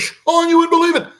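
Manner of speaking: rapid auctioneer talk. Retelling excitedly telling a friend about a flying saucer: imitating talking like an auctioneer. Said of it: "talking like an auctioneer".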